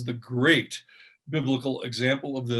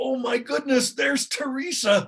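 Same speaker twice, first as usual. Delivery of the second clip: excited, raised, high voice, a little more intense; 11 semitones higher than usual. Father demonstrating how he greets Teresa, a little louder and excited. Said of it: "my voice gets a little louder".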